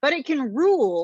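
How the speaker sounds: ordinary delivery, nothing marked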